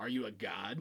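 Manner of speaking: mocking, knowing, dripping with sarcasm. Retelling the back and forth with the Ghostbusters: sarcastic Gozer voice. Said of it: "it was very sarcastic".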